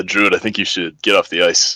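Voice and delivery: loud call. Speaking in character to the druid: saying it loudly. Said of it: "I'm going to say loudly to Tana".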